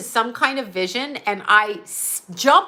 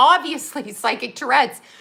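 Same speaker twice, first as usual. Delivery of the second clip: normal talking voice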